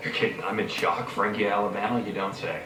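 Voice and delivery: low, soft, dry deadpan sarcasm. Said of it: "Did you hear what I said about sarcasm?".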